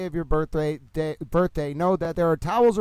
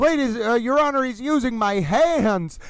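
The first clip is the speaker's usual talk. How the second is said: yelling, higher pitch; 6 semitones higher than usual. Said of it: "he started yelling".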